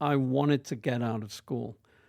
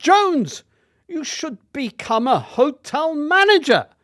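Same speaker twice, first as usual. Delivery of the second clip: put-on very high, loud Welsh schoolmaster accent; 13 semitones higher, 8 dB louder than usual. Retelling what Mr. Lewis told him as a boy, imitating Mr. Lewis's Welsh accent. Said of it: "in his Welsh voice".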